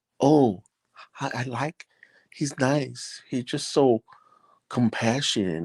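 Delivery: very slow, high, drawn-out, gushing admiration. Speaker imitates how people in the community describe him, in that put-on voice. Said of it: "say it in that voice".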